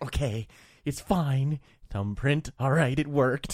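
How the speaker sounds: acted strained calm. Retelling trying to keep calm while shaking: retelling forced calm. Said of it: "trying to keep myself calm".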